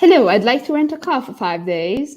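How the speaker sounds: put-on British accent. Acting a customer renting a car in a role play: british accent. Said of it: "I have this British accent whenever we do the role plays".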